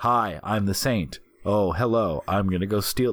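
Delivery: put-on dull, flat voice. Imitating an actor's flat line delivery in The Saint: boring Val Kilmer impression. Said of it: "this boring".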